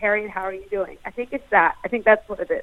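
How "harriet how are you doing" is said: trained, theatrical, drama-school American accent. Demonstrating a drama-school vocal warm-up line in an American accent. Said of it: "Maybe it's also in the American accent, like".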